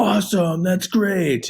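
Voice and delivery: very high, genuinely thrilled, delighted exclamation. Speaker demonstrating a son's reply to his father, really happy. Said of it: "it's really like they're really happy".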